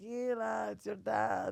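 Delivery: put-on drawn-out Israeli accent. Imagining her father's future voicemails, the speaker quotes him in an Israeli accent. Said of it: "how Israeli accents".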